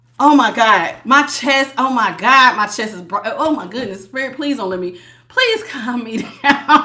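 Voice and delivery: jittery, flustered, overwhelmed, breaking-off nervous outburst. Reading cards and asking Spirit for calm: nervous and overwhelmed. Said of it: "'cause I'm so nervous".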